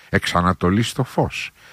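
ordinary talk

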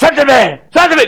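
mock drunk man's high whining protest.

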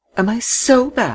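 very high, very slow, drawn-out sneering. A woman answers a man blaming her during an argument; sneering. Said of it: "she sneered".

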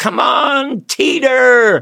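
loud holler. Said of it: "who would holler".

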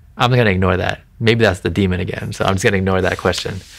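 ordinary delivery

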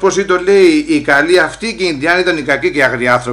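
ordinary talk, nothing marked

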